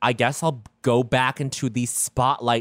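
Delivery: ordinary delivery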